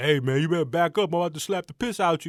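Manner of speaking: put-on New York accent. Retelling a confrontation, quoting a big bodyguard's threat: new york accent. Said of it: "New York accent".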